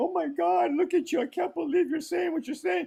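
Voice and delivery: ranting outburst, pitched very high. Throwing the other speaker's earlier words back at them: imitating a ranting tirade. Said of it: "You just went off on a total tirade, like".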